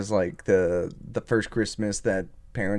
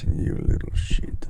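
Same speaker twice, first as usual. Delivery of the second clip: muttered quietly under the breath. Showing how the line should be delivered, the speaker says it muttered under the breath. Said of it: "You have to like mummer it, mutter it".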